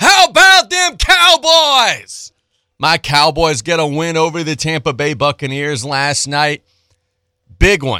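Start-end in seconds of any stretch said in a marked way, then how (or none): 0.0-2.3 very high, loud, drawn-out yell. After warning listeners to lower their speaker volume, yelling. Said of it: "'cause I'm about to yell".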